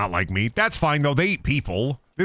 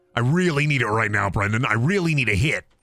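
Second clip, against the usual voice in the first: normal talking voice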